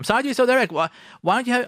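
high, whiny grumble.

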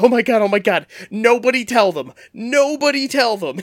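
put-on high, excited, little-kid-like voice. Retelling what a man said at a screening, imitating excited like a little kid. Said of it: "He gets excited like, like a little kid".

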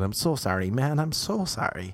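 earnest, apologetic, repetitive delivery. Retelling how someone kept apologizing: imitating someone apologizing over and over. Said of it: "the way he kept saying".

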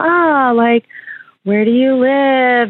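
lilting sing-song, pitch going up and down. Retelling how a man in a stuck elevator questioned her: imitating a sing-song voice. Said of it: "Did he use that sing-song voice the whole time".

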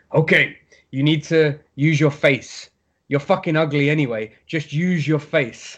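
put-on, thick, heavy Russian accent. Retelling what a man said while fixing his takedowns; thick russian accent. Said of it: "in proper thick Russian accent".

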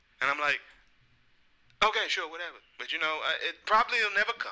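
ordinary talk

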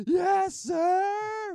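very high, very loud, shrill smartass yell, "sir" drawn out. Retelling how he answered questions in the Army: imitating someone yelling. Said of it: "He'd just yell".

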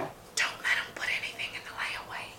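fast, loud, carrying stage whisper. Retelling what an older saleslady said to her friend, imitating a loud stage whisper. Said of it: "said out loud to her friend in a stage whisper".

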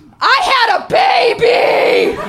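very loud, very slow, drawn-out yell. Recounting a moment of feeling defenseless, re-enacting yelling out. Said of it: "I just yelled out".

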